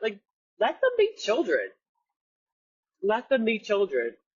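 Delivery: breaking, wavering voice. A mother shares what she told about her children, her voice breaking up a little. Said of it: "my voice is breaking up a little bit".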